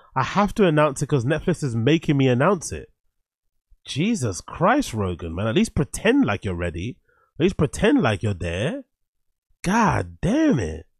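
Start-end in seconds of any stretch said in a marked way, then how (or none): none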